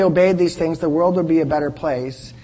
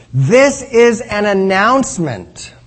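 slow, louder reading-style delivery. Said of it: "I'll read it nice and slowly".

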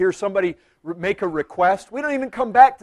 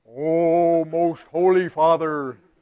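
strange, unnatural prayerful tone, drawn-out oh; 3 semitones lower than usual. Imagining a daughter's voice suddenly changing, the speaker uses an unnatural changed voice. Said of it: "my daughter's voice changes into some unnatural tone".

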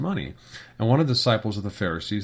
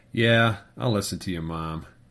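grudging, sarcastic, mock-obedient teenager voice. Imitating a teenager agreeing with a parent while offending: mock-grudging teen compliance. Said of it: "It's in the tilt of your head and the tone of your voice. Just saying it that way".

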